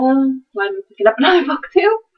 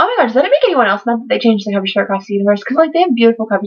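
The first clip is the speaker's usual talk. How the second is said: words tumbling out at high speed, rattled off. Speaker showing books to viewers, talking really fast. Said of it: "I'm talking really fast".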